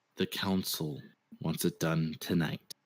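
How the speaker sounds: very low, muted undertone. An unseen speaker is overheard passing on a message, in a low voice. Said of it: "you hear in a low voice".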